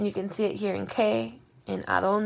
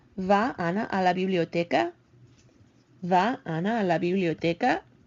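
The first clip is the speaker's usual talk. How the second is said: pitch climbing at the end of "biblioteca". A Spanish teacher models a yes-no question for students, with rising question intonation. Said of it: "You can hear how my voice goes there".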